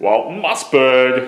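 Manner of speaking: loud, throaty voice that then rises in pitch. Puppeteer showing how he does his character's voice, saying the name: Walton Mossberg throat voice. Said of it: "I have to do a throat like this, and then it goes up".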